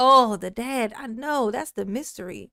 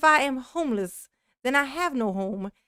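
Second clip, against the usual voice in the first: plain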